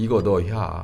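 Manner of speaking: Chungcheong regional dialect. Speaker at church explaining a word, saying it in Chungcheong dialect. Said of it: "충청도 사투리로".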